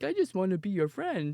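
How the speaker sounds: put-on dog voice. Describing the dog trying to befriend the cat: voicing the dog. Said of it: "And the dog is like".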